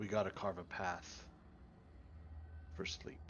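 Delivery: hushed whisper under the breath. Speaking in character while moving toward the threat, said under the breath. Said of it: "And I say under my breath".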